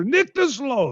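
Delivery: mock playful shout, high-pitched and teasing. Retelling how he yelled his own answer in German, retelling a yell. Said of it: "then I'm yelling my own answer".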